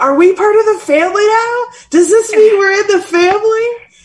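very high, top-of-lungs, loud hollering. Recounting a Fast and Furious ride with friends, retelling a yell at the top of their lungs. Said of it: "I would not stop yelling at the top of my lungs".

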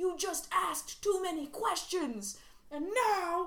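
put-on New York accent. Imitating how characters in modern movies say a line, weird new york accent. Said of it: "I can't place that accent you just used".

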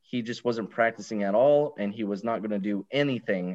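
ordinary talk

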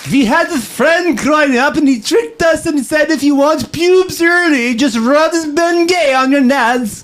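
very high, shrill, loud put-on voice. Reading a viewer's chat message aloud, imitating M D Mantis Toboggan's voice. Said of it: "I'm gonna try to read it in his voice".

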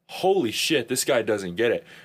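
normal talking voice

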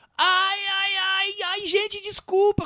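put-on cry of pain. Telling how a man stood up as the film began, retelling a shout. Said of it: "Ele levanta e começa a gritar".

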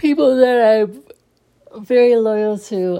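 loud, words stretched through a yawn. Podcasting at about 2 in the morning to loyal listeners, yawning while talking. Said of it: "I'm sorry, I'm yawning".

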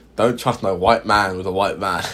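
plain

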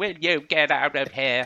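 crap put-on Irish accent, loudly shouted. Retelling a scene where a man shouts at a woman to get out, crap Irish accent. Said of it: "in his crap Irish accent".

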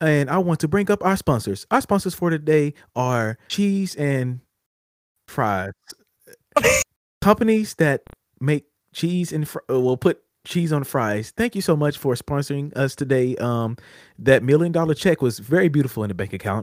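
machine-like, robotic virtual assistant delivery. Host reads out the sponsors while the other host pulls something up: Siri voice. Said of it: "with my Siri voice".

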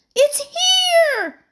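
very loud, very high shriek, held long and drawn out. Narrator voices Emily as her friend finds the carved X; shrieked. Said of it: "shrieked Emily".

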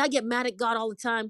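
normal talking voice

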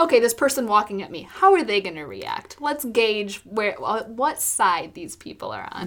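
normal talking voice

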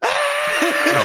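very high, frightened, terrified shriek. Retelling a moment of seeing a knife: imitating own terrified yell. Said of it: "I'm yelling because he nearly killed me".

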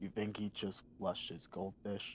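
very quiet, hushed whisper. Player's character speaks to Lady Ezra, quiet. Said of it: "I'm going to say quietly to Lady Ezra".

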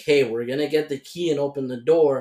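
ordinary talk, nothing marked

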